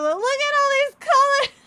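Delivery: very high, thrilled, excited shrieking scream. Retelling shouting at a friend in a scooter yard: imitating own excited scream. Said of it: "I'm just screaming at him".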